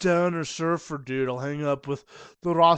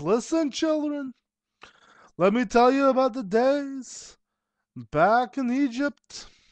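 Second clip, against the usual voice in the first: put-on Yiddish lilt, pitched up, "days" drawn out; 8 semitones higher than usual. A storyteller character addressing children, yiddish accent. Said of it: "Yiddish is a is an accent I've been doing".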